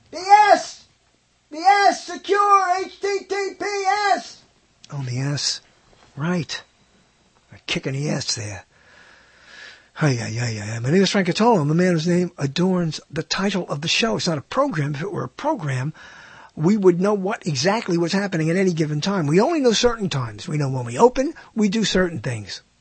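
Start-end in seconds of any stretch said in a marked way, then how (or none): 0.1-4.4 very high put-on scream. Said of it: "Start screaming from my subconscious".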